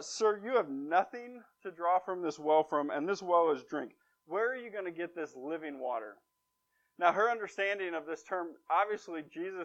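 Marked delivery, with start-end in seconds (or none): none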